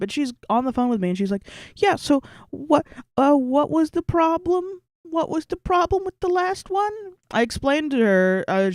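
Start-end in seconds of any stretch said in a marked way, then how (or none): 1.8-6.9 very high, nervous, frightened, scared tone. Retelling a phone call with a new pharmacy lady: imitating a scared caller. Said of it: "they sound so fucking scared".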